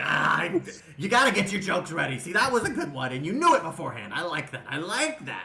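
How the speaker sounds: excited, loud and swooping. Voicing a character who likes a joke someone answered: excited. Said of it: "He gets real excited".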